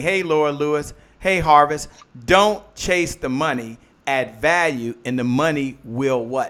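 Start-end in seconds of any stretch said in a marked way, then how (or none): 2.3-6.5 drawn-out, slowed, deliberate delivery. Repeating a key line to an audience, slowing down so they can absorb it. saying it slower. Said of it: "Let me say that again a little slower".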